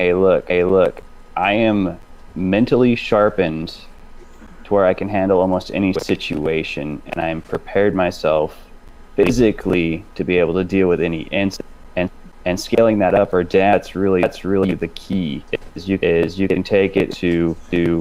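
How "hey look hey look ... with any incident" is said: normal talking voice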